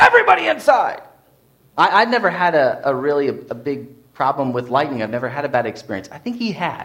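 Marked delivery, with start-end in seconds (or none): 0.0-1.0 very high, animated scream. Recalling the soccer coach calling players in at a clap of thunder, retelling a coach's animated scream. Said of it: "my coach's very animated voice screaming".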